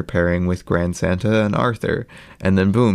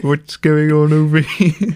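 high-pitched, annoying cartoon voice; 7 semitones higher, 4 dB louder than usual. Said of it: "He's just Kevin from 321 Penguins, but annoying".

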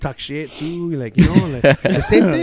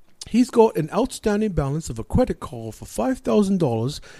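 fake British accent, higher pitch; 3 semitones higher than usual. Retelling a phone call with a woman, in a put-on british accent. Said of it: "I did a British accent".

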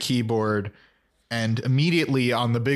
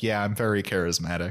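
flat, deadpan delivery, much lower pitch; 4 semitones lower, 3 dB quieter than usual. Retelling a show scene where Willow answers Carly, Willow impression, deadpan monotone. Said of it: "In like a very monotone voice".

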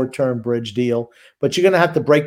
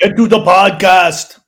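booming, slow, high action-hero voice; 5 semitones higher, 9 dB louder than usual. Asked by the other speaker for an Arnold impersonation, performing it: Arnold impersonation. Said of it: "do your Arnold impersonation".

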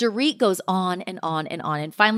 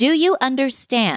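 very condescending, patronizing, talking-down tone; 2 semitones higher than usual. Retelling what one woman said to another at dinner, imitating someone very condescending. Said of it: "very condescendingly".

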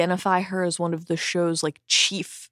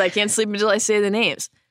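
ordinary delivery

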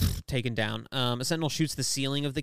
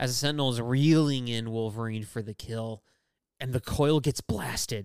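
plain

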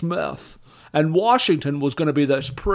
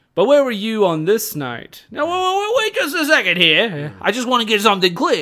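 high, swooping, neurotic, fussy bumbling detective voice; 6 semitones higher than usual. Describing how a character in a movie talked, doing a Columbo impression. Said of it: "you're doing like a Columbo by way of Woody Allen".

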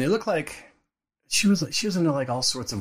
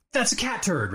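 angry furious yelling, high and pitched up; 8 semitones higher than usual. Retelling being shown a mess on the bed: imitating dad yelling. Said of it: "And he's yelling".

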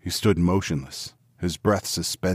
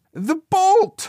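very high, breathless, strained, panting cry; 8 dB louder than usual. An old woman struggles with the bolt as her husband searches below, strained and panting. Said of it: "the old woman's voice strained and panting".

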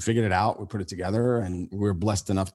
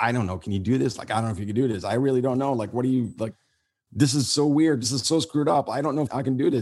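mock nagging, doubting, uncertain voice; 4 semitones higher than usual. Recalling a hard moment, the speaker voices the inner doubt: imitating doubtful inner voice. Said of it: "that voice inside of you sometimes that gives you that doubt".

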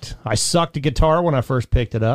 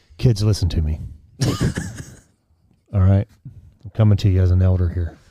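low, sexy, seductive tone, close on the mic; 6 semitones lower than usual. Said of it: "Why do I sound like I'm trying to sound sexy?".

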